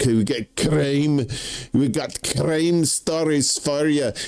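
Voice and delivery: put-on Scottish accent slipping in unintentionally. Introducing a couple of crime stories to listeners, in a put-on scottish accent. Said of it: "I don't know I'm doing a Scottish accent".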